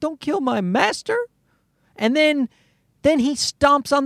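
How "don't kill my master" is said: whiny, whimpering little dog voice. Retelling a movie where a dog watches its master get killed: imitating a whimpering dog. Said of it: "the dog starts whimpering".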